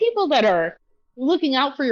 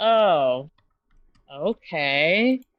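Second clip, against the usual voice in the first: small put-on voice with disgust underneath; 7 semitones lower than usual. Retelling how she answered him, imitating someone sounding disgusted. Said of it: "She was disgusted by it".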